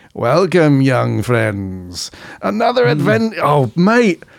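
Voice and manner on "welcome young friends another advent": swooping sing-song voice, pitch swinging very widely. Recalling the Dungeon Master in the studio: Dungeon Master impression. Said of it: "That's actually a pretty good impression".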